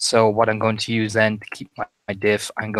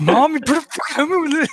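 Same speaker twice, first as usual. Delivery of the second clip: mock sweary, pleading tone, higher; 3 dB louder than usual. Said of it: "sweary prayer to my mom".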